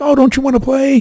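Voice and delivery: bright, cheerful, high voice. Describing a wrestler's character, imitating Bray Wyatt's happy voice. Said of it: "he's all happy and he's like".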